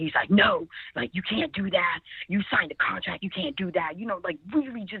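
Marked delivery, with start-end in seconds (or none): 0.3-3.9 play-acted, increasingly angry, heated outburst. Retelling the scene, the speaker acts out one of the men, imitating an angry man. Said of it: "one of the men got really angry".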